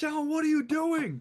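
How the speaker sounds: acted-out, very high, shrill, demanding yell. Telling how she caught him taking her door apart: retelling her yelling. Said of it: "she starts yelling at me like".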